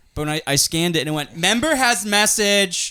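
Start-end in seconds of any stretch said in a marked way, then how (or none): 1.4-2.9 mean, nasty, snide robotic voice, high-pitched. Retelling what the gym scanner said: imitating a mean machine voice. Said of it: "mean in a cunty way".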